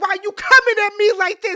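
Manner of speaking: loud, high, furious full-force yell. Retelling an argument, the speaker acts out a man yelling at the speaker. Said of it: "he start yelling".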